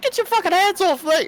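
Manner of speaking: very high, squeaky put-on Texas drawl, shouted. In a game scene, the player attempts a squeaky Texas drawl. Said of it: "How am I gonna do Texas drawl squeaky?".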